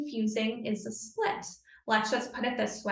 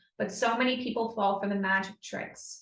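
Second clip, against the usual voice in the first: normal talking voice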